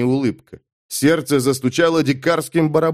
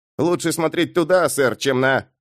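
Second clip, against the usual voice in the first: ordinary delivery, nothing marked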